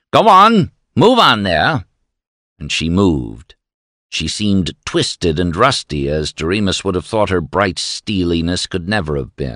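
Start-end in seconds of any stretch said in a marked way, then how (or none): 0.1-1.8 very high, contemptuous, sneering voice. Pushing a man back, someone sneers at a woman. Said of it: "at Lorinda sneered".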